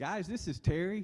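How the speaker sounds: sweet, very high-pitched voice. Retelling how Terry announces herself on team calls: imitating Terry. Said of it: "she'll go".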